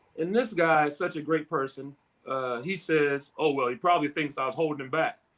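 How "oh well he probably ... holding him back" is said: heavily sarcastic, cutting tone. Retelling the coach's answer to a reporter, imitating his sarcastic tone. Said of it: "real sarcastic".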